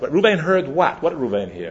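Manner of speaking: ordinary delivery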